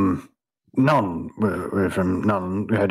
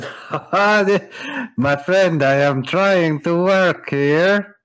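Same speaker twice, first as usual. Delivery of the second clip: very high, slow, nervous laughing voice; 9 semitones higher, 3 dB louder than usual. Voicing a halfling who laughs nervously at a drunk: nervous laughing character voice. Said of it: "starts to laugh nervously and says".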